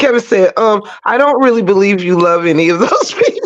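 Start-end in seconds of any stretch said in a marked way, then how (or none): 1.1-3.5 cool, collected, calm and steady delivery. Retelling what Kevin said to her: imitating Kevin's calm voice. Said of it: "it was the calm voice for me".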